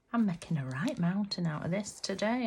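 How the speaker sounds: ordinary delivery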